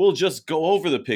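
put-on shouting. Imitating basketball fans at home: mock yelling at the tv. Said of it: "yelling at the T V saying".

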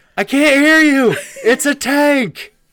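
high, loud shouting. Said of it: "Herschel's like".

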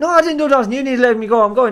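put-on loud, high, heavy Irish accent, laid on thick. Quoting the man who was stopped and searched, in a thick irish accent. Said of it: "in a proper thick Irish".

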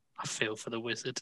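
very hushed, very quiet whisper. A player's character leans over to Hagen and whispers, whispering. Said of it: "lean over to Hagen and whisper".

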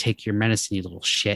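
ordinary talk

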